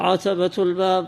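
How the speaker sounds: ordinary talk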